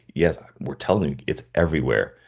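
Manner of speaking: plain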